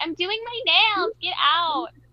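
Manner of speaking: put-on high, camp, flamboyant girly voice. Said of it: "does like an impression of a girl".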